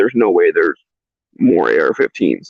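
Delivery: ordinary delivery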